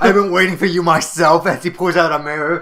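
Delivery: loud villain voice, laughing through the words.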